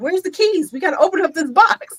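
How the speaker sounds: put-on high, eager little kid voice. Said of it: "Bakari be like".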